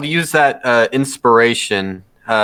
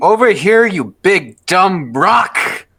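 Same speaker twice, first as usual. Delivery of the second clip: taunting tone, pitched up; 6 semitones higher than usual. Player's character fires a longbow at a golem, screaming taunt.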